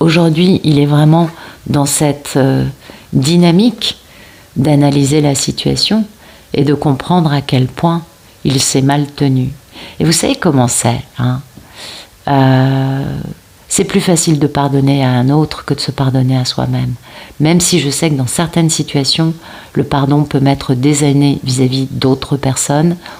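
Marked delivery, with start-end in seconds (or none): 0.0-2.3 calmer, slowed-down, unhurried delivery. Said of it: "je parle trop vite".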